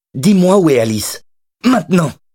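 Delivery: shrill, very high yelled voice. Madeline confronts the former crook, shouting. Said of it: "mais arrête de crier".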